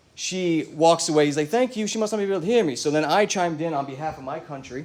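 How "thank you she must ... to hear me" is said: put-on British accent, pitched up, held throughout. Retelling a Dunkin' order by a British guy: imitating a British accent. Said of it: "his accent was hot".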